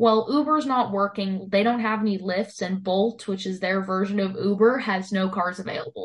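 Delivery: plain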